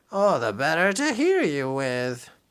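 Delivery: high, silly, swooping disguised funny voice. Reading a storybook aloud, Big Bad Pete answering Little Red Riding Minnie: Big Bad Pete's high, funny voice. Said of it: "Big Bad Pete replied in his high, funny voice".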